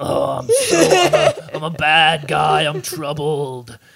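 drawn-out, grinding, gravelly voice. Mocking how a film character talked, in the Batman voice. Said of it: "the Batman voice".

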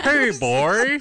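very loud, very high hollering cartoon voice. Joining a group doing Simpsons voices: Homer Simpson voice. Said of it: "it's Homer".

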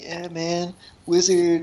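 soft, laid-back, smooth-talking surfer voice. Imitating the other speaker's voice tonight, in a smooth-talking surfer voice. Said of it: "smooth talk a surfer voice".

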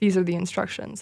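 ordinary talk

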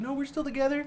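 high-pitched mock voice with laughter.

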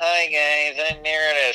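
imitated nasal female voice. Explaining how to tell two women apart by voice, imitating Meredith's nasal voice. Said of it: "She has like a nasally kind of".

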